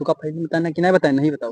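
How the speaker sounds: hushed, secretive talk.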